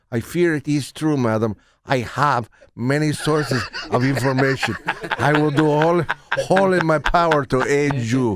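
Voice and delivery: bad, terrible Spanish accent. Redoing a line after the director asked for a spanish accent. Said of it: "Why don't you do it with a Spanish accent?".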